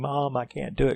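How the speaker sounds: high, faked screaming with play crying. Recapping a scene where Karen fakes out Michael, imitating Karen screaming. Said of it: "she started like screaming".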